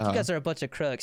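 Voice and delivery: ordinary talk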